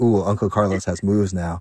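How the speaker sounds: normal talking voice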